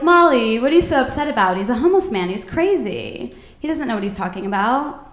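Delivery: plain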